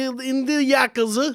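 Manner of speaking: high mock Japanese accent on the word yakuza.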